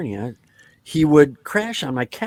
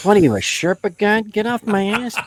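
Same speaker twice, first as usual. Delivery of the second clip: taunting, pitched-up trash-talk tone; 6 semitones higher, 3 dB louder than usual. Retelling a pickup basketball game, imitating Dennis trash-talking. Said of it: "Dennis just starts in on him".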